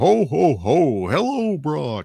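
put-on drawn-out, big delivery with Southern accent showing. Retelling a father phoning his son as Santa, in Santa voice with Southern accent showing. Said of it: "dad tried to mask that Southern accent".

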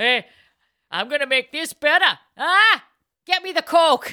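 put-on very loud, high-pitched Midwest accent in a dad voice. Imitating a father improving good wine: imitating father with Midwest accent. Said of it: "Why is everybody from the Midwest now".

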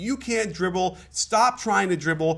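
mock high-pitched scream. Retelling a break at training camp practice: imitating someone screaming. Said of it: "he just started screaming at him".

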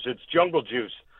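hushed, half-whispered stage whisper. Retelling what someone said at the side of the stage: imitating a half-whisper. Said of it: "just kinda whispers".

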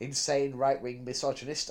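ordinary delivery

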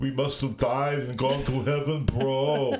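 put-on Austrian accent. Asked to say a line like Schwarzenegger: Schwarzenegger impression, Austrian accent. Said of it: "Say it in the Schwarzenegger thing".

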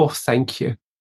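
modest, meek, self-effacing, most humble gratitude. Retelling how a woman praised them, the speaker recalls answering with a retelling of a humble thank-you. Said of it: "in my most humble voice".

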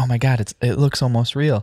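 put-on thrilled, worked-up, all-excited outburst. Retelling a character's reaction in the holodeck: imitating excited speech. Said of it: "all excited about what's going on".

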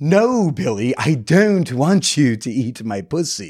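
play-acted, very drawn-out, slow, theatrical delivery. Retelling what a woman suddenly said to the speaker: imitating a performative way of speaking. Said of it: "she just goes in a very performative kind of way".

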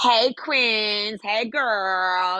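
put-on campy delivery. Imitating a paid video greeting: imitating his campy greeting. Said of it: "He's like".

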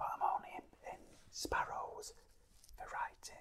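private, breathy, hushed, very quiet whisper. Retelling what a nephew whispered once everyone had gone: retelling a whisper. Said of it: "he just whispered to me".

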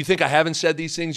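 normal talking voice

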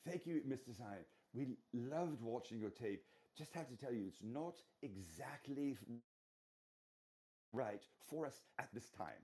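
gracious, courteous, put-on lovely British accent. Quoting a TV station manager's assistant replying to the speaker, in a put-on British accent. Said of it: "in her beautiful British accent said to me".

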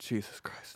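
hushed whisper, barely voiced, muttered under the breath. Acting out someone reacting to the kid: muttered under the breath. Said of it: "Like the under the breath".

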